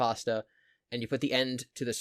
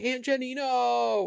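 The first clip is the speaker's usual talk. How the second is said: put-on very high, piercing, shrieking scream; 13 semitones higher, 4 dB louder than usual. Quoting a clip of a girl from a show: imitating a girl screaming. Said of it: "the one girl screaming".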